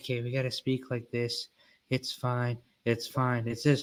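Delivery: quiet, soft, hushed library-style indoor voice. Showing what an indoor voice sounds like: quiet indoor voice. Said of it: "an indoor voice is so quiet".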